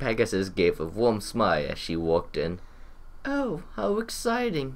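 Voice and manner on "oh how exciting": mocking sarcasm pitched very high. Narrating a story, voice the Pegasus as she walks in: sarcastic. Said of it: "She sounded very sarcastic there".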